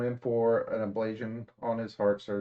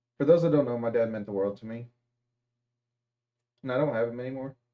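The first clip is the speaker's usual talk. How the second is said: speaking while struggling hard to hold back tears. Telling viewers in a video about losing their dad, holding back tears. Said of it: "Trying not to cry".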